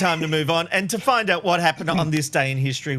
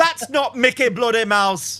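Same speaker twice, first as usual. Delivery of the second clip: Liverpudlian Scouse accent, higher pitched; 6 semitones higher than usual. Discussing a show, the speaker tries their father's accent: liverpool accent.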